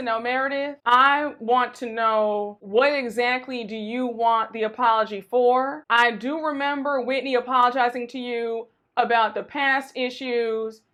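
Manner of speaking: usual speaking voice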